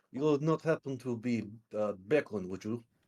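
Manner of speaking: put-on Russian accent in English. In a roleplay, the speaker questions another character, slipping back into a Russian accent. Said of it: "back into the Russian accent".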